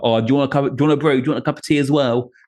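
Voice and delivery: casual, quick, bright working-class way of talking. Speaker showing how they talk to the people fixing their house, working-class way of speaking. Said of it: "more sort of working class way of speaking".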